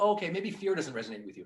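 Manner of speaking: plain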